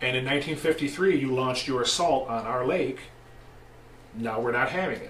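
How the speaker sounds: normal talking voice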